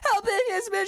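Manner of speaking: very high, frantic, hysterical screaming. Retelling a film scene where a character screams for help: imitating hysterical screaming. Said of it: "she's hysterically screaming".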